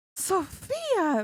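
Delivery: calm, no yelling. Retelling a phone call when she suddenly calls out a name: mimicking a calm call, not yelling. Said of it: "But so calm, right? Like, not yelling".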